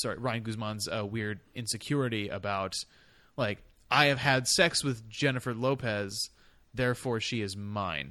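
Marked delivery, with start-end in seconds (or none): none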